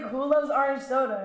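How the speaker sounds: usual speaking voice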